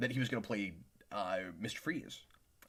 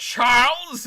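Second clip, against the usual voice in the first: very high, booming, loud belted single word; 17 dB louder than usual. Retelling a reply to a friend's question: Ian McKellen accent. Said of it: "in an Ian McKellen accent".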